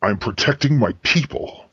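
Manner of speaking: tight voice through gritted, clenched teeth. Asked why he is here, a character answers through gritted teeth. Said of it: "He's saying it through gritted teeth".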